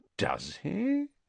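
very high, soft, delicately disbelieving inflection. Replying to another speaker's claim, voice delicately inflected to suggest disbelief. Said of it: "his voice delicately inflected to suggest his disbelief".

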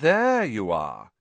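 slow, drawled words. Reading a novel aloud, voicing a character greeting two others, drawling. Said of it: "he drawled".

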